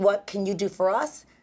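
normal talking voice

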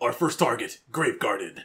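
intimidating, menacing voice. Reading a villain's game line aloud in an intimidating voice. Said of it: "Grave Garden is hard to say in an intimidating voice".

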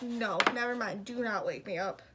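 ordinary talk, nothing marked

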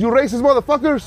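put-on thick Mexican accent, laid on, high. Quoting a mexican woman who learned english here, imitating her thick accent. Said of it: "Why you sound Indian?".

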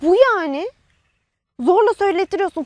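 cross, combative, heated and angry retort. Right after being asked why they are shouting, the speaker answers, shouting. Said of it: "Ne bağırıyorsun?".

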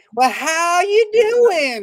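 put-on Southern accent. Imitating the child actor's line in Son of Frankenstein: Southern accent. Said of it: "Where the hell did that accent come from?".

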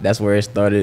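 ordinary talk

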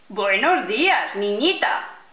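gruff, rough, hoarse growl. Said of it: "Gruñó una voz ronca".

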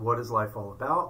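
ordinary delivery

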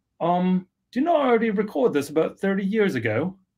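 high-pitched, really bad British accent. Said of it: "gonna put on a really bad British accent".

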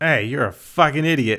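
heated, angry outburst. Jokingly insulting an imagined commenter: mock angry outburst. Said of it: "I got caught up in the, in the emotion there".

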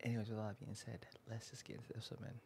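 hushed whisper. Introducing an episode to viewers around midnight, whispering. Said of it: "I am whispering because it is literally like midnight".

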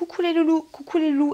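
put-on high, loud, chirping child-like voice.

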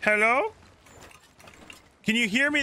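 high, carrying call, projected far.

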